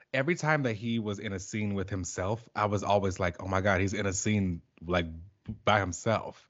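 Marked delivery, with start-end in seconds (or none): none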